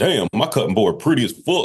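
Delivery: silly, goofy put-on character voice. Retelling recording a guacamole video in a silly voice: Gangsta Chef voice. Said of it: "just started doing the voice like".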